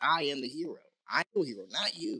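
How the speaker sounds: usual speaking voice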